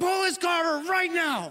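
mock furious through clenched teeth, very high. Retelling a past moment in a car with her, angry through gritted teeth. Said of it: "you start talking through your teeth and you're angry".

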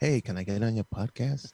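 put-on meek, humble voice. Showing how you ask to get on a podcast, put-on humble voice. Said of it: "In my humble voice".

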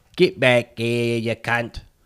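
rough, put-on attempt at Australian accent. Trying out an accent while playing a broke taxi driver: attempted australian accent. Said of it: "That's a little better".

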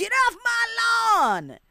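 put-on old man screaming, very high and very slow. Comparing him to an old man screaming: imitating an old man screaming. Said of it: "the old man fucking screaming".

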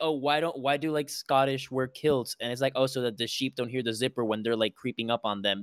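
ordinary talk, nothing marked

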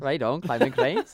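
put-on Irish accent. Showing the other speaker how they sound: imitating an Irish accent. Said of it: "That's how you sound".

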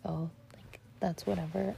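ordinary delivery

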